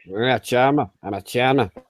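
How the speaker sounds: put-on Scouse accent. Co-hosts talk over each other; one of them does a Liverpool accent. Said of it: "when you do that Liverpool accent".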